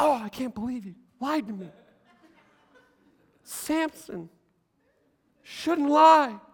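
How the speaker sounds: playacted female voice. Retelling the Bible story, Delilah pleads with Samson; Delilah voice. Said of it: "I don't know if her voice was like that".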